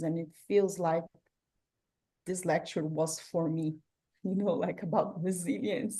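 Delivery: choked-up voice, words catching with emotion. An audience member responds to a lecture, choked up, emotional. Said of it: "I'm sorry, I got emotional".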